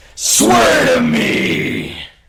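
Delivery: very loud, high, gravelly rasp at full blast.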